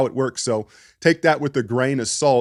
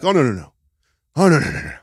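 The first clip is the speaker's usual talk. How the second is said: put-on wrestling promoter voice; 2 semitones higher than usual. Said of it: "Gets in his Vince McMahon voice".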